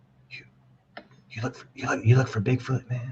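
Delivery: quiet, soft whisper under the breath. Retelling a quiet question from an executive at work: imitating someone whispering. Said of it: "Why are you whispering?".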